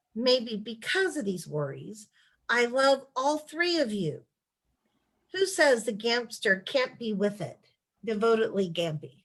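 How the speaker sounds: plain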